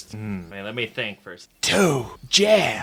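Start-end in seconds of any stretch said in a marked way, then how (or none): 1.6-2.8 vague, tossed-off surfer dude voice. Taking a turn in a voice-guessing round: Keanu Reeves voice. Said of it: "I just did a vague surfer dude voice".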